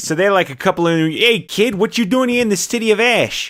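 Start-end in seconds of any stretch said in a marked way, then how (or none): 1.1-3.5 put-on Manhattan street New York accent, pitched up. Trying out how characters from Manhattan would talk; New York accent.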